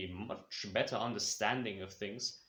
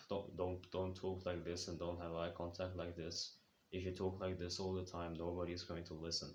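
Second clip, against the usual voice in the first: low, flat, lifeless, robotic droning monotone; 4 semitones lower, 7 dB quieter than usual. Listing tip twenty-two, having no enthusiasm: flat monotone voice. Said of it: "that freaking like monotone voice".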